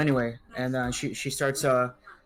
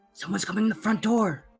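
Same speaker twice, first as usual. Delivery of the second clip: high-pitched, shouted whisper of alarm; 7 semitones higher than usual. Voicing a character warning that someone is coming: whisper-screaming. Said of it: "she what kind of whisper screams and says".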